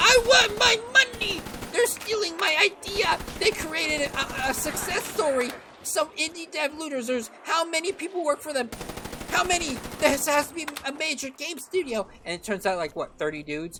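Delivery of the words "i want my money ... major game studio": put-on very high, shrill screaming rant. Imitating a big company screaming about an indie copycat: imitating Nintendo screaming.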